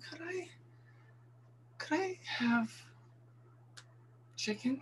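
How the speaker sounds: slow, soft, breathy, hesitant whisper. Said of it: "That was my impression".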